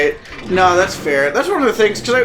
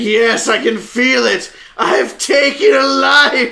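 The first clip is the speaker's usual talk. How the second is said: slow, rising, triumphant hero cry. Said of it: "It's like".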